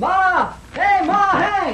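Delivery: yelling out. Inky calls out for Ma in the hotel, hollering. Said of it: "What's the idea of hollering like that in the hotel?".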